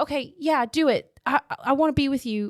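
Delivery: high, desperate begging. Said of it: "she's all like".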